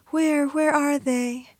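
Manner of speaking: play-acted awed, hopeful wonder in high voice. Retelling the mother in the bathroom, hoping to see the ghost: mock-wondrous voice. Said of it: "she said in this wondrous voice".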